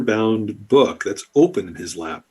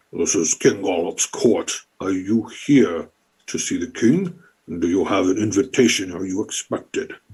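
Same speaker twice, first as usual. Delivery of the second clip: put-on armored frog-guard creature voice; 2 semitones lower than usual. Speaking as one of the armored guards questioning an arriving group, bullywug guard voice. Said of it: "It seems to be about 4 bullywugs here that are dressed in basically plate armor that's designed for them. / It seems to be about 4 bullywugs here that are dressed in basically plate armor that's desig".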